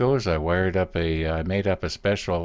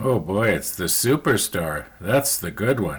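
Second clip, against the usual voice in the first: sarcastic tone. Looking at a tiny brush just bought: sarcastic. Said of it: "I was being sarcastic".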